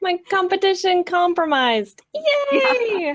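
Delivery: mock gleeful cheer, high, loud, squealed.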